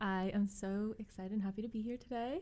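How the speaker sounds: very hushed, soft, calm, relaxing radio voice. Guest greeting the college radio hosts on air, in a calm radio voice. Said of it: "You got such a radio voice right now".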